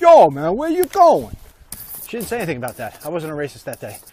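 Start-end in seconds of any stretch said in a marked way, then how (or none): 0.0-1.4 put-on Italian cab driver accent, very high and loud. Speaker recalls a bit done on another day: Italian cab driver voice. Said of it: "the Italian cab driver voice".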